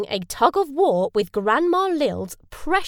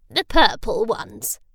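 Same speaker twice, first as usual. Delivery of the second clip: chuckling and slower. Lil, the grandmother, answers Julia's question, chuckling. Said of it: "chuckled Lil".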